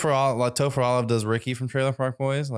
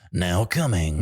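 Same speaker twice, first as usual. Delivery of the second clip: movie trailer announcer voice, lower pitch; 5 semitones lower than usual. Retelling announcing a bridal party: movie trailer voice. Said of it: "like a movie trailer voice".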